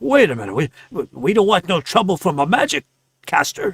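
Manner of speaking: shaken, stammering, stuttering voice. Game narrator voices a man backing away from a magic caster: shaken, stuttering. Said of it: "he kind of stutters in his speech".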